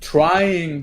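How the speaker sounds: heavy emphasis on the word "trying". Plugging his TikTok to listeners, the speaker stresses the word 'trying'. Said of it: "I stress the word trying".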